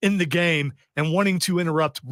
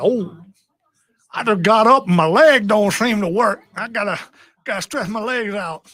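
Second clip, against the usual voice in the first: put-on slow, stiff, elderly-sounding voice; 4 semitones higher, 4 dB louder than usual. Paraphrasing how Matthew sounded to you after he stood up, imitating Matthew sounding old. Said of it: "when I hear people sounding old".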